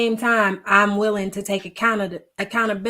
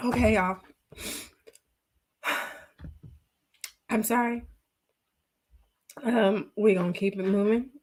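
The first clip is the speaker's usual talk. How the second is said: tearful, crying, composing herself; 7 dB quieter than usual. Speaking to viewers on a live stream right after crying, tearful. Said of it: "I did not mean to cry on this live".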